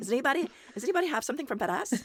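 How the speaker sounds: put-on fast, high-pitched Minnesota accent. Retelling an announcer whose 'FedEx' always sounded funny, in a Minnesota accent. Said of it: "I'm kind of doing her accent".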